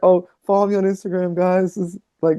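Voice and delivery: mock high, teary, crying voice. Retelling a last video made while sad: imitating own past crying. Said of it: "My last video was me fucking crying".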